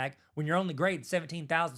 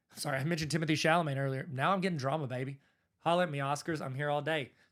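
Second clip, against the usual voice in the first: plain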